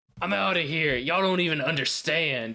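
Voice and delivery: put-on full yelled outburst, high-pitched. Imagining a teenage rebellion at the dinner table: Lore yelling. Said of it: "Lore just yelling".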